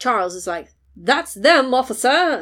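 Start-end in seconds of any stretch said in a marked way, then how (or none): 1.0-2.4 put-on loud, high-pitched English accent. Act out Charles calling to an officer at arrivals, in an English accent gone Matt Berry. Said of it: "That went Matt Berry".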